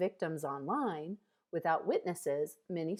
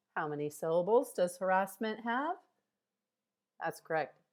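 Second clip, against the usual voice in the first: ordinary talk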